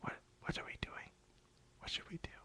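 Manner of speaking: near-silent whisper, words lost. Imitating a classmate from a school group: very quiet voice. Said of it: "are you trying to talk?".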